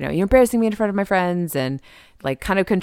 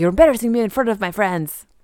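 put-on French accent; 2 semitones higher than usual. Retelling a man's reply to a woman who says she is leaving; french accent. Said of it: "I'm doing a French accent".

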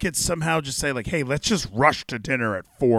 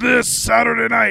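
pitched-up, creaky, raspy promo voice; 9 semitones higher, 4 dB louder than usual. Mocking how often the broadcast plugs shows: Excalibur impression. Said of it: "That's my, uh, Excalibur impression".

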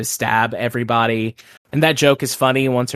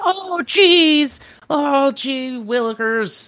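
very high, crackly, scratchy voice. Showing one of the only two voices he has, in a crackly, scratchy Justin Roiland voice. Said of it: "like, crackly, scratchy voice".

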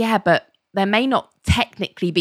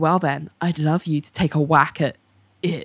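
put-on suggestive, flirty tone, lower pitch; 3 semitones lower than usual. Retelling a scene, voicing Cassandra's line: imitating a suggestive, flirty tone. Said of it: "who is dripping in innuendo".

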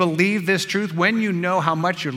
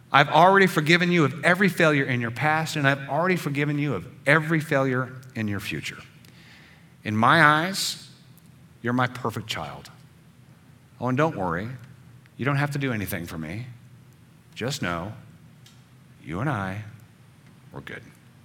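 put-on whispered divine voice, lower; 4 semitones lower than usual. Speaking as God into the listener's ear: voice of God whispering. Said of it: "I'm gonna be the voice of God whispering in your ear".

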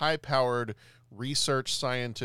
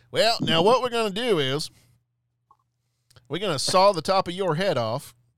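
put-on drawling Southern accent, raised and high; 7 semitones higher, 8 dB louder than usual. Imagining a brain surgeon who talks like this, in a put-on Southern accent. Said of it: "a Southern accent, and you don't necessarily want your brain surgeon sounding like somebody who goes".

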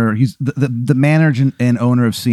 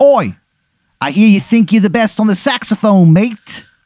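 bad put-on British accent, very high pitched; 9 semitones higher than usual. Quoting what a man said to him, in the man's terrible English accent. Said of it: "He's got a terrible English accent".

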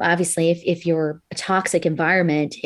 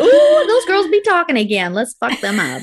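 very high, shrill, sing-song, mischievous, taunting spirit voice; 11 semitones higher, 5 dB louder than usual. Imitating the spirit who messes with their sound: voicing the spirit. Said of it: "Spirit's like".

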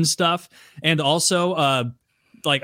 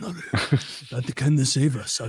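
put-on Japanese accent; 2 semitones lower, 4 dB quieter than usual. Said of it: "the automaton is a sacred and fearful thing".

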